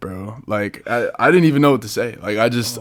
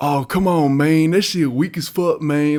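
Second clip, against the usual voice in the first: put-on Memphis accent with an unhurried Southern drawl; 5 semitones higher than usual. Retelling what a coach said in the referee's face, in a Memphis accent. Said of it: "He had that Memphis accent".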